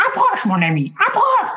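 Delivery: very high creature voice with pitch swooping way up. Speaker offers to do a Yoda for the listener: Yoda impression. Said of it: "je peux te faire Yoda".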